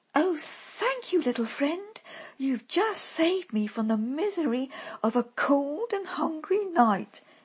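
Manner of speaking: high exclaiming outburst, voice lifted. A woman thanks the rat who has just helped her, exclaiming. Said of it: "she exclaimed".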